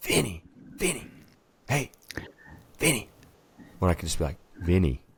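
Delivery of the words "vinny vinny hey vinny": high-pitched, loud whisper-yell. Showing how they call out to a friend by name, whisper-yelling. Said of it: "Whisper yelling".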